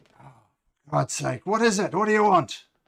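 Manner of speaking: booming, very loud orc gentleman voice. Voicing a half-orc gentleman who answers the door, in a half-orc voice. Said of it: "a half orc gentleman ... And he says".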